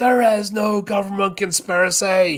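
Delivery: very high pitched scream, screamed out. Retelling a movie moment where Burt screams out: imitating Burt screaming. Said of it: "the Bert's screaming out".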